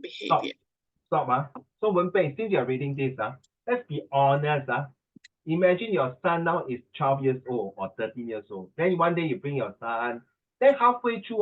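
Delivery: ordinary talk, nothing marked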